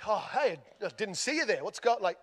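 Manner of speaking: put-on thick, overdone Australian accent with swooping pitch. Retelling greeting a police officer at the car door, in an overdone Australian accent. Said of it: "overusing the Australian accent".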